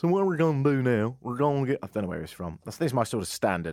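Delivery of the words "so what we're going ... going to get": put-on American Deep South accent. Retelling what a motorbike instructor said, like the guy from South Park. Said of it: "like the guy from South Park".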